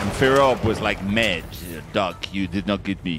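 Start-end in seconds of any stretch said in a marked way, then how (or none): 1.0-3.2 put-on low French accent. Retelling what Firob said to Doc, in a French accent. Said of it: "That's my French impression".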